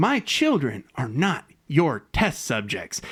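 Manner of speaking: put-on low, slow, angry indignant tone. Recapping a tv episode, quoting a character's protest: retelling an angry line. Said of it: "because she's mad".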